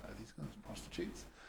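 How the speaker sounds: very quiet, hushed whisper. Retelling a question asked quietly to friends at a bar: imitating own past whisper. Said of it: "I whispered to my friends".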